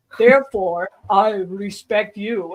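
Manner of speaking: put-on deep, slow, archaic old English spirit voice. Retelling what a fire spirit said telepathically: deep old-English-style voice. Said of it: "it had like this deep like voice".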